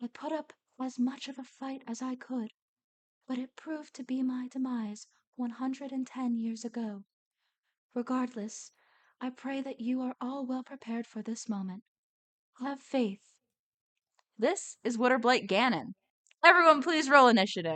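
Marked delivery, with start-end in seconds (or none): 0.0-13.2 gentle, kindly, softly spoken voice. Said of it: "a gentle voice echoes all around you".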